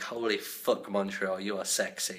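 usual speaking voice

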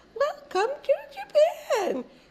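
very high soprano voice, recorded sound. Imitating a pre-recorded welcome message heard in a limo, high-pitched soprano female voice. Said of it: "a very high-pitched soprano female voice".

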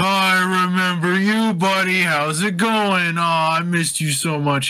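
high, gushing, happy fake-drunk babble. A player distracting someone with an overly friendly greeting, pretend drunk. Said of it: "like the the drunk "I'm so happy to see you" thing".

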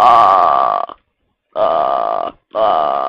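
very low, strange put-on voice. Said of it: "I don't know why I'm talking like this".

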